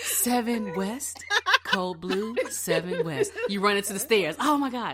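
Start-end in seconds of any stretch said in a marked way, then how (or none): 0.0-3.3 calm, sing-song overhead-pager announcer voice. Retelling a code blue call at the hospital, imitating a hospital announcer. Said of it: "you got that voice on point".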